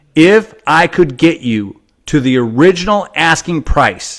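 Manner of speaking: very slow, deliberate, each word drawn out. Repeating an offer one more time for the recording, speaking very slowly. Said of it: "very slowly for the recording".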